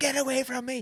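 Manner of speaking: acted-out screaming. Speaker recounting seeing their mum after a perm, retelling a scream. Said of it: "I like screamed the place down".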